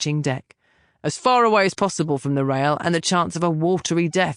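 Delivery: plain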